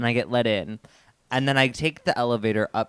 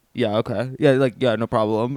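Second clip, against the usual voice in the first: code-switched voice, pushed lower and deepened; 4 dB louder than usual. Retelling answering a man in an elevator, putting on a deepened voice. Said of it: "deepened my voice and I was like".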